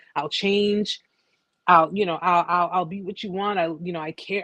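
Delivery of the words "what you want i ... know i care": normal talking voice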